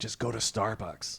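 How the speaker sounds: muttered under breath. Speaker retells answering someone asking about calling 911 on a cell phone, muttered under breath. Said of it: "I say under my breath".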